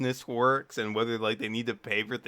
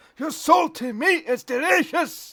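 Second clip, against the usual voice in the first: dwarf voice, very high pitched and very loud; 9 dB louder than usual. Speaker shows how a line was meant to be read: dwarf voice. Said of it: "be read out in dwarf voice".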